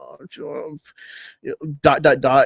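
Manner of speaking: mocking, breathy, stumbling delivery with awkward pauses. Mocking characters who pause awkwardly mid-sentence: mocking awkward pauses. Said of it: "throughout the sentence all the time".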